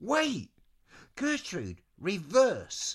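loud, swooping yell. [name] calls out to Gertrude, yelling. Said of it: "[name] yelled".

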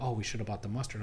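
usual speaking voice

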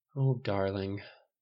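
soft, quiet, gentle voice. A mother answers her son after he admits listening at the door, softly. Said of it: "she said softly".

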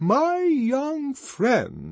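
high, loud, grave, stern and solemn. The arch-community songster addresses a pleading young man: loud, solemn severity. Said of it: "in a tone of loud and solemn severity".

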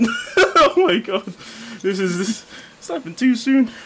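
laughing to tears while talking. Laughing too hard at an image early on: laughing to tears while talking. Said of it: "and I'm already crying".

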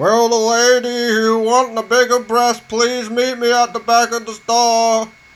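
bellowed, high loudspeaker shout, lady drawn out. Retelling a butcher's announcement over the store's public address, retelling a shout. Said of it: "he's shouting".

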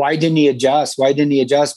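ordinary talk

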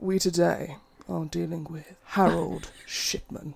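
slow, morose delivery. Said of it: "try a bit more morose".

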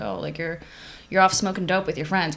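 mock-teasing, imitated joking tone. Recalling a cool surfer dude who called the speaker out, retelling a joking jab. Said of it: "he would jokingly say like".

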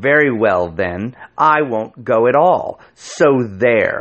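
slow, curt, waspish, snapped delivery. Narrator reads a little woman in a queue snapping at the man with her. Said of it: "snapped out at a man".

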